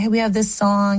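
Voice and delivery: ordinary talk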